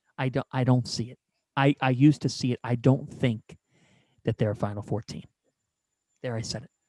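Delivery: speaking quietly. Sharing a take close to the microphone: speaking quietly. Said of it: "I'm kinda saying it quietly".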